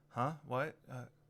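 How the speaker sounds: groggy, half-awake, plain normal voice, no performance. Voicing a character bumbling awake after being shaken: groggy non-stage voice. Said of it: "his not stage voice".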